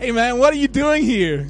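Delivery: very loud, high, bad, fake American accent. Retelling what a guy at a car said to him, in a bad American accent. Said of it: "that was a bad American accent".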